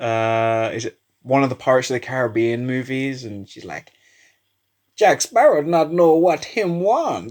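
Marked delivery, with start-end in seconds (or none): 5.0-7.3 high, clumsy, fake Jamaican accent. Recalling a line from a Pirates of the Caribbean movie: bad Jamaican accent. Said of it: "Americans just can't do Jamaican accents".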